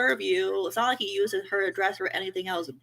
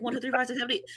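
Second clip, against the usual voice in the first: numbers rushed out rapidly in one go; 4 semitones higher than usual. Speaker imitates a woman saying her phone number online, rattling off numbers fast. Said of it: "She said it fast".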